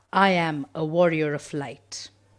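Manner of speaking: loud voice. Repeating a group affirmation after the leader: saying it loudly.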